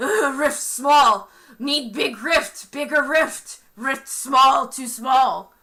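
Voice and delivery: loud, shaking, trembling creature voice. Voicing a creature shaking on the ground: shaking creature on the ground. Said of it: "just shaking, it's like".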